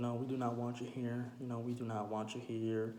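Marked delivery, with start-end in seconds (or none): none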